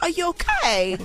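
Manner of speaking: put-on high baby-talk voice. Speaker shows how they baby-talk their brothers, in a baby voice. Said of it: "baby talk them".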